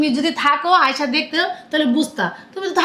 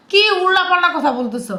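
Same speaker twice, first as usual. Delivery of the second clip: ordinary delivery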